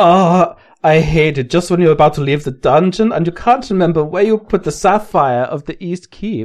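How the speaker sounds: generic, vague, put-on miscellaneous European accent. Playing a card game, reading a card in a put-on European accent. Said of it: "I can do Miscellaneous European".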